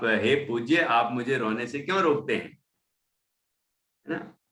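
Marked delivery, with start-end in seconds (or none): none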